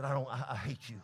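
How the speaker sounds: very hushed, soft, low, sulky half-whispered grumble. Acting out a boy sent upstairs by his parents: half-whispering under his breath. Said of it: "he whispers under his breath and said".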